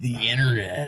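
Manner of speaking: mock sleazy, oily delivery. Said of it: "just the way he said that".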